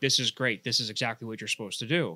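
normal talking voice

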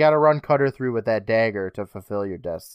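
ordinary delivery

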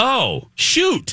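put-on cool-as-a-cucumber calm, very high and small. Speaker retelling Haley's reaction to driving the wrong way, imitating Haley's calm reply. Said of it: "as calm as a cucumber".

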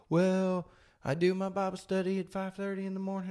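put-on high-pitched Southern belle accent and voice. Speaking to listeners about Bible study, slipping into a Southern belle accent. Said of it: "I got like a Southern Bell accent there".

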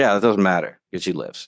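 plain

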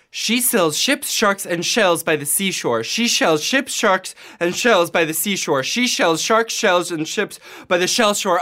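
rapid speech, rattled off at full speed. Challenged by another speaker to say a tongue twister five times: tongue twister said fast. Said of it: "5 times fast".

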